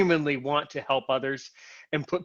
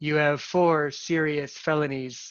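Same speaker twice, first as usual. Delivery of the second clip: slow, mechanical, robotic automated-call voice. Imitating a scam call that claims four serious felonies: imitating a robot voice. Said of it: "with the robot voice".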